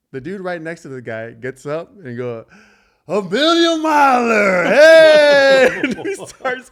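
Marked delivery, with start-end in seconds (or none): 3.0-5.8 put-on high, booming, slow, drawn-out drunken whoop. Retelling how a drunk passenger shouted: imitating a drunk guy cheering. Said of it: "this guy is drunk as all out".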